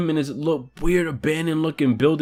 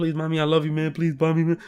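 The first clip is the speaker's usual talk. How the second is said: mock frightened, desperate, begging plea; 5 dB quieter than usual. Retelling a cousin begging his mother while scared: imitating a scared plea. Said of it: "because he's so scared".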